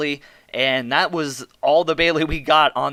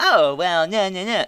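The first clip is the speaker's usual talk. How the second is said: put-on Valley girl voice, higher pitch; 5 semitones higher than usual. Complaining about a wrestler's promos, imitating Nia Jax as a Valley girl. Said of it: "Valley girl s-, type of voice".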